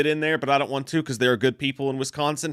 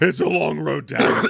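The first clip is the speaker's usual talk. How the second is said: put-on hoarse smoker voice, much slower; 3 dB louder than usual. Hoarse after drinking last night, joke about how you sound in a hoarse Deborah in accounting voice. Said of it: "I sound like Deborah in accounting who smokes".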